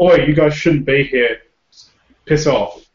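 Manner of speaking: loud yell. Confronting a man about to pound on the back door, yelling. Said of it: "I'm going to yell at him".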